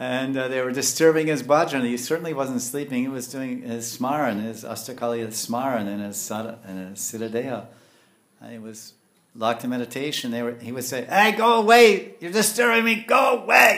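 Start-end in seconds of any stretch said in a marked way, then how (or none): 11.0-13.8 put-on old man voice, much higher, louder. Speaker retells a meditating man shouting at people disturbing him, imitating an old man. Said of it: "You know how old men speak".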